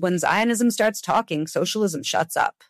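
ordinary talk

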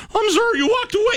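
voice cracking up very high. Retelling your apology to someone who walked away from the machine: retelling a cracking voice. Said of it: "And my voice cracked too".

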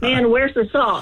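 acted worked-up tone. Acting out searching the kitchen for the salt: acting all worked up. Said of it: "But you're so emotional".

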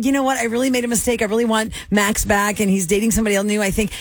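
plain

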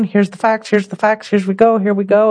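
level, droning, flat monotone reading. Describing an employee's first recorded meeting, imitating her monotone delivery. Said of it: "It was very monotone".

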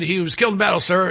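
ordinary talk

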